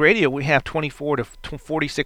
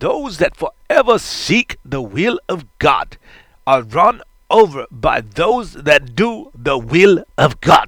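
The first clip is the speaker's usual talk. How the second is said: put-on German accent; 4 dB louder than usual. Quoting a line said on the show two weeks ago: Reinhard Bonnke German accent. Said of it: "I have to go in his German voice, I have to do it".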